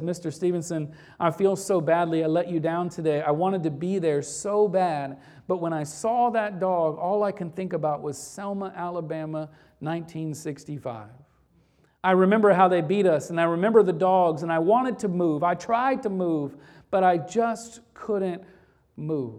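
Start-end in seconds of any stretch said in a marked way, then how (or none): none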